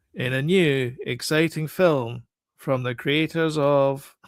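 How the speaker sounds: put-on bored, uninterested, slow announcer-style reading. Retelling how an announcer read out a film announcement: imitating an uninterested announcer. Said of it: "he just didn't sound particularly interested".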